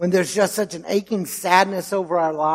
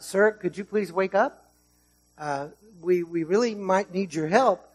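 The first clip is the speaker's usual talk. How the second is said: mock-gentle, pretend polite tone, much quieter; 4 dB quieter than usual. A speaker retelling a ship's captain waking a sleeping man, mock-gentle polite request. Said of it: "please don't think he gently touched him".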